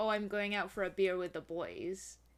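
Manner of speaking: ordinary delivery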